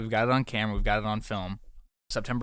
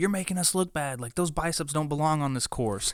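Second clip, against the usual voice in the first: put-on lady's voice yelling, called out, pitched up; 6 semitones higher than usual. Retelling what a lady on the course said to a runner: imitating a lady yelling. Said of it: "some lady yelled at him".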